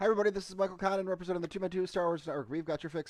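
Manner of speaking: rapid-fire eager rush. Podcast host opening the show right after watching a season finale, talking really fast. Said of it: "I'm talking really fast because holy shit".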